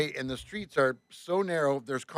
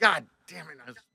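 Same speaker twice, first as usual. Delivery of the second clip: acted, pissed-off, frustrated angry outburst; 3 semitones higher than usual. Retelling finding a dent on the side of the bus, retelling own angry outburst. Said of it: "That made me more even freaked out and pissed".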